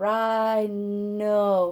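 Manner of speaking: rhino stretched slowly, sound by sound. Saying rhino slowly enough to hear its letters: slowly drawn-out rhino. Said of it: "if I say it slowly enough".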